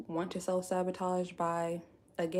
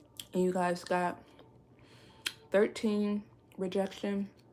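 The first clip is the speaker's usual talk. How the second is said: speaking while chewing ice, mouth full. Reading out tarot card results to the audience, talking while eating ice. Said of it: "Sorry, y'all, I'm eating ice".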